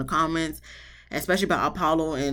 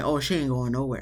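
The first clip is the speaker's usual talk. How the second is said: mock firm, certain, definitive tone, faster; 3 semitones lower than usual. Reviewer quoting a man's remark about Shireen, mimicking a definitive tone. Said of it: "with like a definitive tone of voice".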